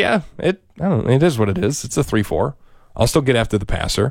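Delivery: unbothered, offhand, indifferent tone. Imitating a player's tone about a defensive change: imitating Micah Parsons sounding indifferent. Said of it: "listen to the tone in his voice".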